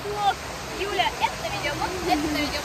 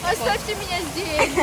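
plain

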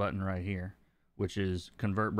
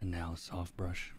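soft, calm painter voice, quieter; 2 semitones lower, 6 dB quieter than usual. Coloring a drawing, doing the whole thing like Bob Ross. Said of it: "do the whole thing like Bob Ross".

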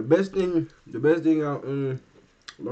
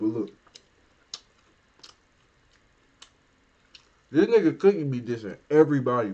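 talking with mouth full of food. Speaker talks to a buddy while eating, talking with mouth full. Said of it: "I'm talking with my mouth full".

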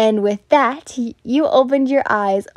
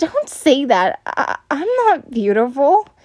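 stammering, stumbling over words, slower; 3 semitones higher than usual. Shy after a compliment, unable to meet his gaze, stammering. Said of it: "you stammered".

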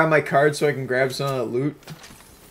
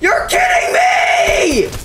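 high, drawn-out, all-out screaming. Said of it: "hear [name] screaming his balls off".

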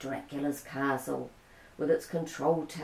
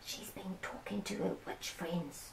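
very soft, hushed, very quiet whisper; 3 semitones higher, 13 dB quieter than usual. Simon speaks to Stella Rosa about Nana Lupin, whispering. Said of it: "Simon whispered to Stella Rosa".

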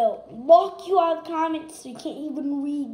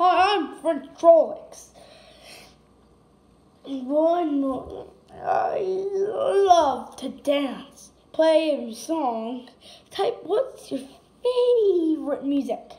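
slow, stretched-out, made-up toy voice. Voicing a homemade toy greeting viewers: French Trollocs toy voice. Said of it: "He's just making a voice".

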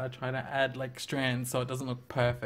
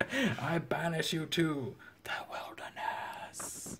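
slow, whispered, mock regal pronouncement voice. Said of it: "And she's like".

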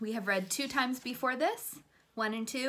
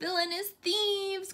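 small creature's high little cry; 9 semitones higher than usual. A little creature wakes the sleeping detective: crying out. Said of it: "cried the little creature".

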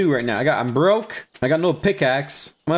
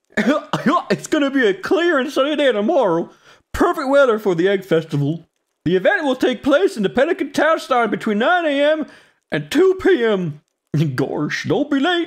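high, goofy cartoon dog voice; 8 semitones higher than usual. Reading the game's weather forecast aloud, in a Goofy voice. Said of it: "How you do Goofy's voice again?".

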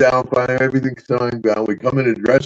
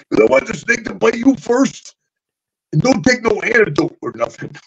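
very high, larger-than-life, put-on character voice; 10 semitones higher than usual. Retelling a wrestler asking another to be bitten first: Macho Man Randy Savage impression. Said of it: "Macho Mom's so funny".

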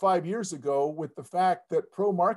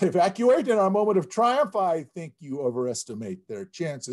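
ordinary talk

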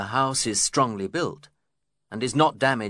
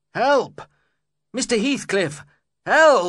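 shrill, very high, loud yell; 13 semitones higher, 7 dB louder than usual. A tenant attacked by dogs calls to the landlord, shouting for help. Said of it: "I shouted".

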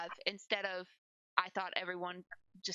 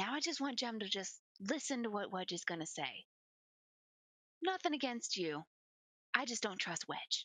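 whispering, faster. A player's character whispers to Jenny so nobody outside can hear: whispering. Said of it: "I whisper to Jenny so that anyone".

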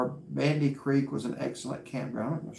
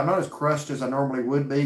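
plain

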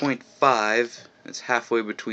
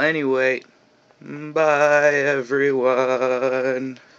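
trembling voice, higher and louder; 4 semitones higher, 5 dB louder than usual. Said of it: "we're back to the shaky voice".

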